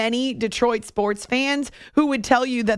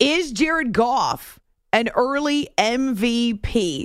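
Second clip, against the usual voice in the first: very slow, deliberately clear, careful enunciation. Repeating a question after yelling it the first time: very slow and clear. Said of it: "I'm saying it very slowly, very clearly".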